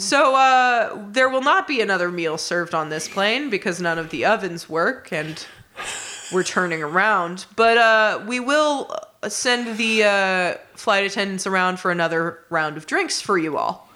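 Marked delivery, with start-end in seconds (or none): none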